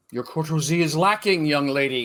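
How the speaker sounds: very loud, high, haughty, imperious tone. Reading a scene aloud, a character scolds a young lady: very mock imperious voice. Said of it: "she says in a very mock imperious voice".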